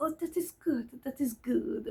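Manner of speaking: French-sounding voice. Retelling a psychiatrist's phone call, imitating his French-sounding accent. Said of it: "his accent".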